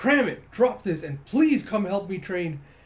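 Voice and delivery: high, loud, sharply snapping voice.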